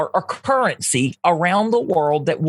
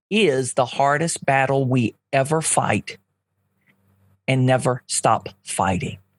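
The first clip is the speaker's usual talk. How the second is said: a little slower, with lower pitch; 5 semitones lower than usual. Asked to repeat the E. E. Cummings quote so it sinks in, saying it a little slower. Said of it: "Can you say that again and just a little slower?".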